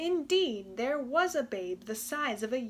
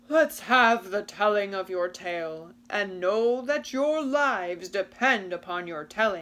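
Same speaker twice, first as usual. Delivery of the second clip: deep, loud, growling giant voice; 4 semitones lower, 6 dB louder than usual. Narrating a tale, voicing the giant in a growling giant voice. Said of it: "the giant growled".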